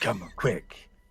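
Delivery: put-on dramatic starship captain pacing. Voicing a character recording a distress log: Captain Kirk pace. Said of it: "trying to match, like, the Captain Kirk pace".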